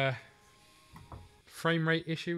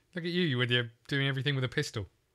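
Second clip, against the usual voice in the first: usual speaking voice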